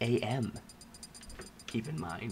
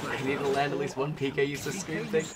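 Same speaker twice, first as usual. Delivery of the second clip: ordinary talk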